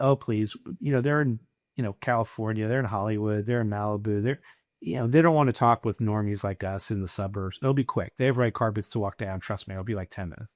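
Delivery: ordinary delivery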